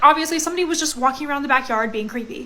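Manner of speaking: ordinary talk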